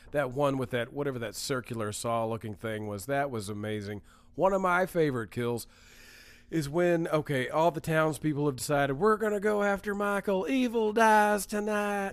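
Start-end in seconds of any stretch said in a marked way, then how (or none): 8.9-12.1 fake southern US accent, pitched up. Recounting a favorite movie kill, voicing the townspeople in a put-on southern accent. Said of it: "I don't know why I'm doing a southern".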